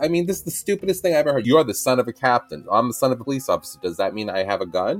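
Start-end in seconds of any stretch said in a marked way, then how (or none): none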